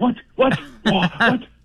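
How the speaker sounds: stunned, put-on impression voice, repeated. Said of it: "You do a fantastic John Bird impression".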